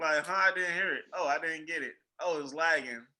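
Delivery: ordinary talk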